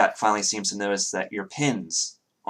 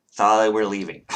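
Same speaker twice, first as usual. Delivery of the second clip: loud, fed-up, disgusted, dismissive tone; 6 dB louder than usual. The narrator voices Vera telling Thalia they are leaving, disgusted. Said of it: "shakes her head in disgust and says".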